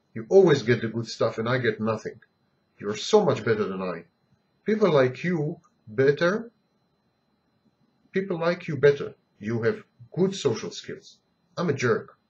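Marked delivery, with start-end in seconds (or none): none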